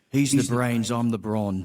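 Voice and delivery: put-on high-pitched, not-the-best South African accent. Retelling how a work partner introduces them: not-the-best South African accent. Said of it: "my South African accent isn't the best".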